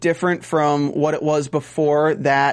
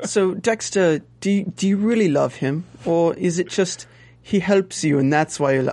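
put-on bad British accent. Imagining what Vogel would say if she knew the whole story, bad British accent. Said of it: "We're doing bad British accents here".

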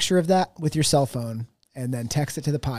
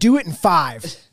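usual speaking voice

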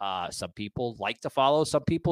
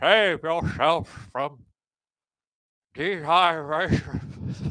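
slow, drawn-out sage voice; 3 semitones higher, 3 dB louder than usual. Mocking the country's leaders with a quote: Star Wars Jedi Master voice.

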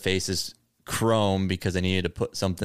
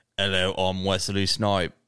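bad put-on British accent. Joking about an actor attempting a British accent: Wesley Snipes doing a bad British accent. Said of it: "Wesley Snipes couldn't do a British accent".

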